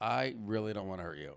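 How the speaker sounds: mock laughing through the words while talking. Retelling a woman laughing to herself while being told to chill out; imitating someone laughing while talking. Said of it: "she was like laughing out loud to herself".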